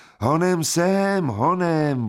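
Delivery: high-pitched voice calling out across a distance. Onlookers call out as Jekl rises over the roof ridge, calling out. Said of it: "volali vzdušní besedníci".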